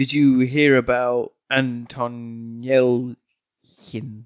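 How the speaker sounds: very slow, monotone, garbled words and noises.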